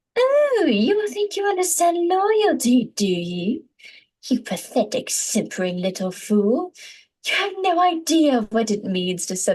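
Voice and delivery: spat-out, high, nasal witchy voice with disdain. Trying the scene reading again, witchy, nasal, spitting the words with disdain. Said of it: "spits the words out ... witchy quality ... nasality".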